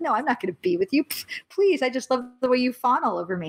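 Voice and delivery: haughty, very condescending, dismissive tone. Retelling a movie character's rejection, imitating a condescending tone. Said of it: "in a very condescending way".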